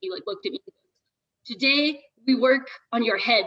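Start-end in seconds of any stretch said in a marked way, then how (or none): 1.5-3.5 put-on butchered Czech accent. Retelling what a hardcore climbing guide said: butchered Czech accent. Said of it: "he's Czech and I'm gonna, like, butcher his accent".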